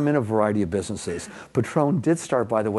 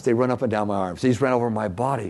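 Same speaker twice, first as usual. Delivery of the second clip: plain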